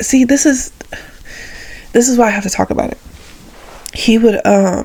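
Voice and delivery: voice catching, choked up, on the verge of tears. Speaker remembering how he came to give life lessons, on the verge of tears. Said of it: "Why do I feel like I'm about to cry?".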